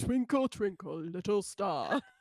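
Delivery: deep, low grown man's baritone voice. Imitating a porcelain doll with a man's voice: deep baritone doll voice. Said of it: "a deep baritone coming out of this going like".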